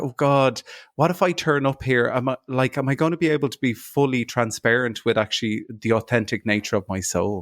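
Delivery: ordinary talk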